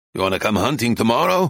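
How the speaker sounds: ordinary delivery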